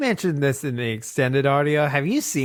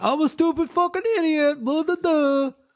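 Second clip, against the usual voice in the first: very high, dim-witted, dopey puppet voice. Mocking a TV alien by opening an impression: Alf impression. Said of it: "start every impression of Alf with him just going".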